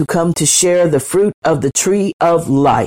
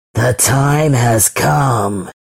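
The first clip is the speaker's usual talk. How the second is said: low hissing dragon voice, "come" stretched out; 6 semitones lower than usual. Narrating a story, the ancient dragon awakes and speaks, hissing. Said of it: "it hissed".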